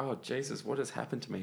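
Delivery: ordinary talk, nothing marked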